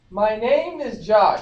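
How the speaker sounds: very loud, projecting voice. A guest, told to project, introduces himself again, projecting loudly. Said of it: "Raise your voice higher".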